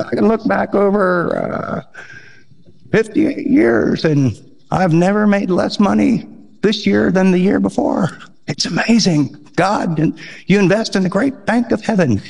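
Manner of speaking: put-on elderly man's voice. Quoting a really old man, in an old man voice. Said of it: "he talked like this, ... he was really old".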